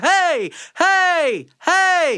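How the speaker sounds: full belting-register call, high and loud. Speaker demonstrates what people call the belting register, a belted yell. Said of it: "this is your belting register".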